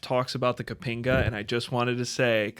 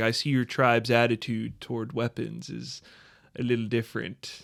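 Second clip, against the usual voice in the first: ordinary delivery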